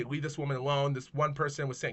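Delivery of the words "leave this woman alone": ordinary talk, nothing marked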